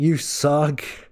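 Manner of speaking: play-acted, light heckling yell. Retelling heckling the other team from the bleachers: imitating own past yelling.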